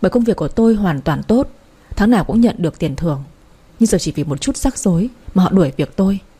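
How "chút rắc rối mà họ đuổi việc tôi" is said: ordinary delivery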